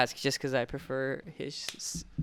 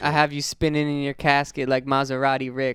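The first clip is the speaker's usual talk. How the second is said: plain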